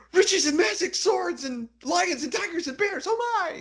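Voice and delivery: very high, screamed-out babble. Retelling a game scene where a character is threatened, imitating Flinky screaming out. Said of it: "Flinky just screams out like".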